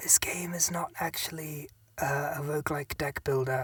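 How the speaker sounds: hushed whisper. Reviewing a game, telling the audience a secret in a whisper.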